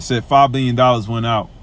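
ordinary delivery

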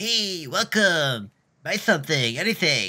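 slow, drawn-out voice, pitched a bit high. Voicing a shop bird in a game, Cheech voice. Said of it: "I'll make it sound like Cheech".

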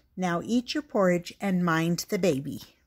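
plain

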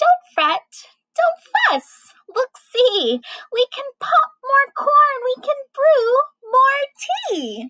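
tiny squeaky mouse voice, high and swooping. Reading a story aloud, Mouse speaks to Bear, squeaking like a mouse. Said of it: "Mouse squeaks".

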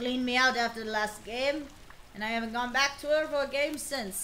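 loose, sketchy, put-on Scottish accent. Playing a character addressed as Marcellus, in a vague put-on Scottish accent. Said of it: "I've got some vague Scottish going on".

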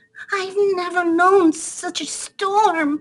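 squeaked out up high. Reading a story, the narrator voices a mouse with cold babies, squeaky Mother Mouse voice. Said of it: "squeaked Mother Mouse".

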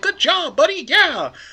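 very high, near-squeaky cartoon voice. Quoting praise a shy man would never give: almost a Mickey Mouse voice. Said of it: "You almost said that in a Mickey Mouse voice".

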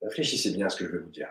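soft, hoarse speech.

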